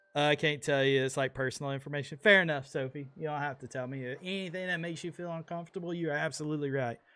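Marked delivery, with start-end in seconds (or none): none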